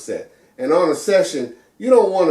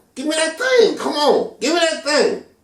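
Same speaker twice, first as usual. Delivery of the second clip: very high-pitched, coaxing bandleader voice; 14 semitones higher than usual. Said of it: "He's going".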